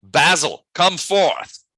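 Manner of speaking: high, loud called-out yell. Voicing a character who calls a creature to come forth: yelling. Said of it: "He yells out".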